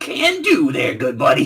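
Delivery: put-on breezy, high, swooping Brooklyn accent, kept up. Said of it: "that Brooklyn accent".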